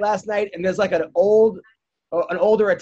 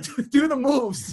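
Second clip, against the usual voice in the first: put-on New York Long Island accent; 5 semitones higher than usual. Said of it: "very, very Long Island, like you said".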